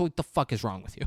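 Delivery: ordinary talk, nothing marked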